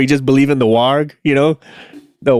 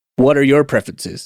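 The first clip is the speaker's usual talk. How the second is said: ordinary delivery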